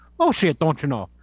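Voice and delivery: put-on Irish accent. Joking about Saint Patrick's Day: put-on Irish accent. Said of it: "Do that Irish accent".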